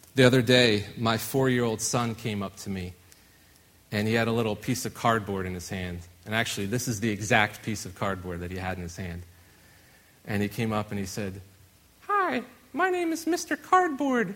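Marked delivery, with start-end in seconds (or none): 12.1-14.4 very high-pitched toy-character voice. Retelling a four-year-old son introducing his cardboard: Mister Cardboard voice. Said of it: "the voice that he used".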